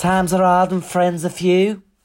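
high drag-queen persona voice. Quoting a line after mentioning Lily Savage: Lily Savage impression. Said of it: "that's my Lily, um, Savage impression".

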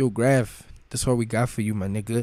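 ordinary talk, nothing marked

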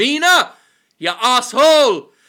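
very loud, shrill, screeching yell. Quoting a husband in a game turning to his wife, imitating a shout at wife. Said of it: "the husband just turning to the wife and going".

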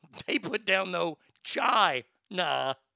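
words broken by bursts of laughter. Joking about how a name is pronounced, laughing while talking. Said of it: "i'm sorry i'm laughing".

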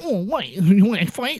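1950s greaser-style talk. Retelling a movie beach scene, imitating Tom Hardy's fifties greaser accent. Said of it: "Tom Hardy somehow changes his accent into, like, a fifties greaser".

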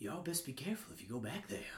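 creepy, very quiet, low, hushed ominous voice. Playing a character in a role-play, warning the others, in a creepy ominous tone. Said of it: "why are you being creepy?".

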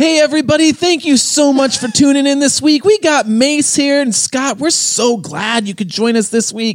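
very high, loud, corny, cheesy professional host voice.

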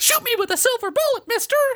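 very high, squeaky cartoon voice. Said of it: "a terrifying giant werewolf with a Mickey Mouse voice".

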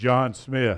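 booming, loud voice. Retelling a figure on a throne calling out a name: booming God voice. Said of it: "big, loud, booming God voice".

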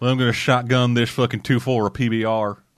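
put-on Southern US voice. In banter about fighting a giant monster: put-on southern accent. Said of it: "I did a different kind of southern".

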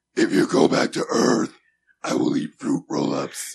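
rough, loud, pushed demonic villain voice. Showing how a character sounded in his head: Angela from Night of the Demons voice. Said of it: "You know who you sound like?".

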